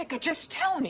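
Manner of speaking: very high, shrill yelling. Pressing a sibling to share something private: yelling. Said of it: "Why are you yelling?".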